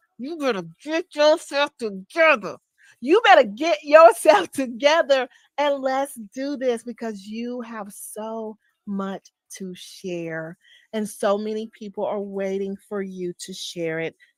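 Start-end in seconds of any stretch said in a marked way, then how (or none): 0.2-6.8 mock angry scolding through clenched teeth. Retelling how really mad parents spoke: imitating a mad parent, through clenched teeth. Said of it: "Just imagine me saying that to you".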